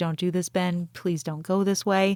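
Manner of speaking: put-on crying, tearful voice. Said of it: "She's kinda crying a little bit".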